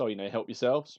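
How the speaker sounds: ordinary talk, nothing marked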